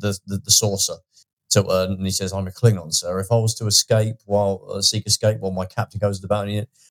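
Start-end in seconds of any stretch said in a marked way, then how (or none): none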